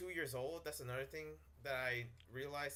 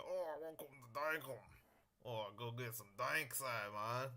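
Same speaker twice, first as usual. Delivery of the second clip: put-on Australian accent, easygoing; 2 semitones lower than usual. Host welcoming the guys to the game Dunkel: Australian accent. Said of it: "I can speak Australian perfectly".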